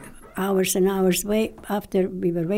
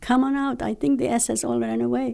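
put-on rough, creaky, urgent raised voice; 4 semitones higher than usual. Retelling calling the afraid women out of the building: retelling own past screaming. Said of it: "I'm screaming at them".

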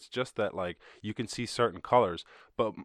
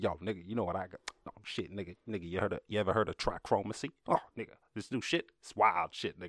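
streetwise drug dealer voice with hustling hype; 4 dB quieter than usual. Acting out how he talked, in a drug dealer voice. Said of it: "He's talking like he's a drug dealer".

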